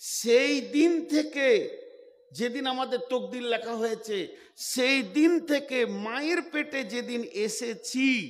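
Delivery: said with loving tenderness.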